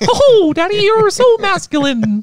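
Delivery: very high, very loud cartoon squeak. Joking about masculinity in conversation, Mickey Mouse voice. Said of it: "Would you turn into Minnie Mouse?".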